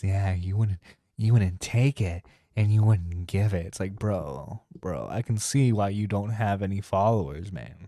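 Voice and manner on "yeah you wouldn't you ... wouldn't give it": deep, loud, creepy dropped register. Mocking how some guys talk when it gets creepy, lowered voice. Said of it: "let me lower my voice".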